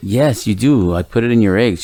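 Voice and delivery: ordinary talk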